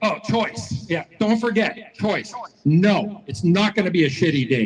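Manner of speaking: plain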